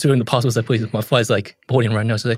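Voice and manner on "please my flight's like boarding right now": ordinary delivery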